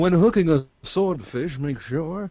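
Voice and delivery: put-on wealthy man voice. Podcast bit playing a caller on a yacht sending in a tip, in a rich yacht-owner voice. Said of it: "you do that voice too good".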